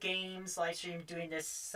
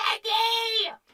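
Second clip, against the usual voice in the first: very high, loud, put-on yelling voice. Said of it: "Leggy impression".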